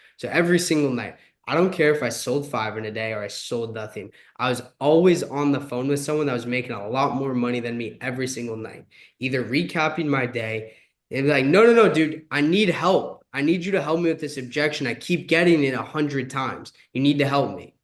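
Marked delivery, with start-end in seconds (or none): 11.5-17.6 put-on urgent pleading yell, close to begging. Recalling nightly calls to someone earning more, the speaker acts out yelling for help. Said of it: "And like I would yell at them".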